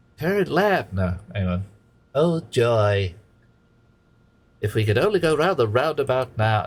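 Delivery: high, swooping, sing-song goofy cartoon voice. Imagining Stimpy from Ren and Stimpy as the car's GPS voice: Stimpy voice. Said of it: "I can't do Stimpy properly".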